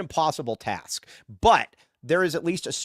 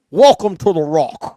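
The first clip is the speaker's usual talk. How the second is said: booming, drawn-out movie-star voice, word by word; 3 semitones higher, 12 dB louder than usual. Doing a Sean Connery impression on request: Sean Connery impression. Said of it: "you wanna hear my Sean Connery impression?".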